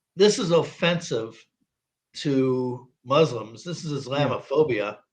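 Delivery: ordinary talk, nothing marked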